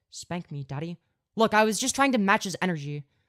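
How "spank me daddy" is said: flat, monotone robot voice. Redoing the line as it has to sound, in a monotone AI voice. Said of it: "It's gotta sound like an A I voice".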